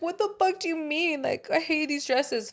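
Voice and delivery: put-on high, tearful, upset crying girl's voice. Retelling a TV girl complaining about dresses: imitating a crying girl. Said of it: "I remember the girl was crying".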